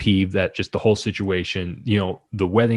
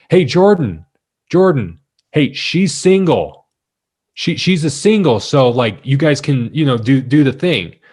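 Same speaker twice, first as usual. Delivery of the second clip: mock announcer voice, loud and high-pitched; 5 semitones higher, 4 dB louder than usual. Retelling how a man stood up and turned to the speaker: retelling a loud announcement. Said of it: "announces in in not a quiet voice".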